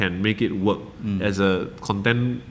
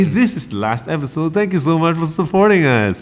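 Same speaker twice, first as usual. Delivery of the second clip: cheerful, upbeat, bright voice, raised and happy; 8 semitones higher, 7 dB louder than usual. Speaker redoes the closing thanks for the last episode, in a happy voice. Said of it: "So maybe I say it in a happy voice".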